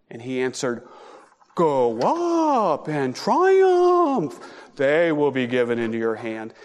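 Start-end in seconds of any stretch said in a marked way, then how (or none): 1.5-6.5 slow sing-song mocking tone, "up" drawn out. Speaker reading a prophet's answer to the king, mocking. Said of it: "I say that kind of mockingly".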